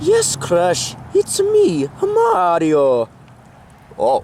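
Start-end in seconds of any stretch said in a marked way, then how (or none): 0.0-3.1 very slow, sing-song voice with swooping pitch. Answering Crash in a skit, revealing himself: Mario voice. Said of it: "is that Mario's voice?".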